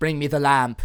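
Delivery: loud, barked villain voice with zero menace. Mocking how the movie villain asks for the lamp: imitating an unmenacing Jafar. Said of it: "he doesn't have, like, an evil voice".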